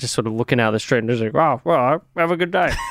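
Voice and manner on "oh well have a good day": proud dad voice, pitched up. Retelling his goodbye out the front after you finished up, in a Jeff Kennett voice, like a dad. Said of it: "You did the exact same voice for my dad".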